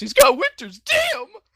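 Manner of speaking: put-on high squeaky voice. Retelling a movie scene, imitating John Travolta's high squeaky voice. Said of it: "John Travolta in his high squeaky voice goes".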